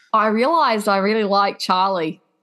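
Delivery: bad, clearly put-on Australian accent. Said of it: "my attempt at an Australian accent".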